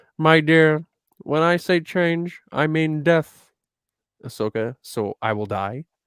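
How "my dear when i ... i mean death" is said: put-on mystical creature voice, higher and louder. Reading Bendu's lines aloud in a scene with Ahsoka: Bendu voice. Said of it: "grade my Bendu voice".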